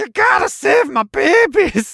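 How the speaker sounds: very high, loud, slow, drawn-out voice. Retelling what a game character says when found: imitating the egg lady. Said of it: "they just go like".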